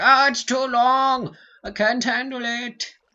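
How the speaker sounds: very high, very loud, shrill, complaining shriek. Imitating viewers complaining that the episode runs long: imitating viewers screaming. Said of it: "you guys will be screaming at me like".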